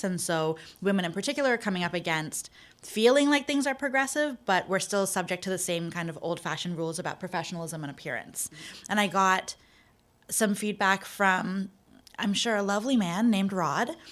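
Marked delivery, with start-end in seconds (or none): 12.2-13.9 dripping with sarcasm. Describing a commenter who sent feedback on a piece: sarcastic. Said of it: "so much sarcasm".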